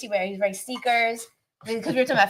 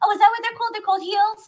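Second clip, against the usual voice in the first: put-on very high little-boy voice. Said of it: "he'd have a high voice".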